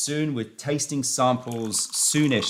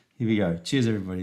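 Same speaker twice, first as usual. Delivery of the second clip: usual speaking voice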